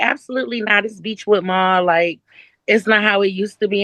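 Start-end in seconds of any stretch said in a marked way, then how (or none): none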